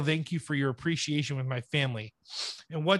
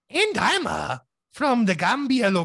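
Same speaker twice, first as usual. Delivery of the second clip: high, drawn-out leprechaun voice; 8 semitones higher, 5 dB louder than usual. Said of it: "I was like Leprechaun there for a second".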